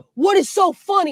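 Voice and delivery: mock threatening, slow, menacing, drawn-out. Retelling how the grandpa snapped across the table: imitating an angry grandpa. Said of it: "Like he was gonna hit me".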